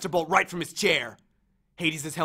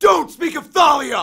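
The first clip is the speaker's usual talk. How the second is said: full-throated shout, very high-pitched and very loud; 12 semitones higher, 12 dB louder than usual. Luke answers the narrator, who has just mentioned Thalia; shouting. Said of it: "He shouted".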